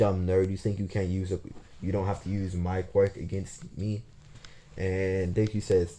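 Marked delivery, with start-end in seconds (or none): none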